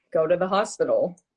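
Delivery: normal talking voice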